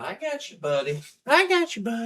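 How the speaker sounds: very high, swooping, sing-song puppy talk. Talking to a puppy while holding him: voice for talking to a puppy. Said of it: "I do have a affectation when I talk to my dog".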